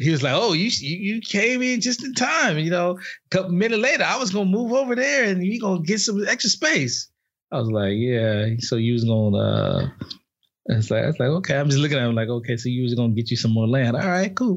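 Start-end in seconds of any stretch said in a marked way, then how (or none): 0.4-7.1 stretched-out, pitched-up southern drawl. Retelling what a man with his family told him, the speaker uses a southern drawl. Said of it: "that southern drawl".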